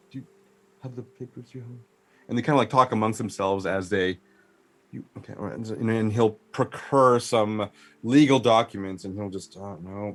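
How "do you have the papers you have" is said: quick, hushed whisper. A game character confers aside with his cohort, in a lower voice. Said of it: "talks to his cohort there in a lower voice".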